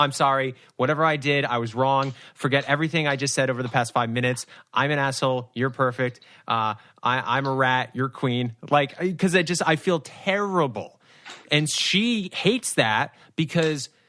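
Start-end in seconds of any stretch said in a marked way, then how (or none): none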